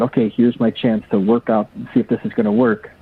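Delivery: ordinary delivery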